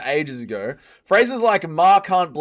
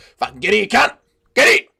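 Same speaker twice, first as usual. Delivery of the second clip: loud, aggressive, threatening bark, pitched up, full force; 5 semitones higher, 5 dB louder than usual. Imagining him reacting to someone doing the Ziz pose, a Chopper Read impression. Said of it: "Impression of Chopper Reed".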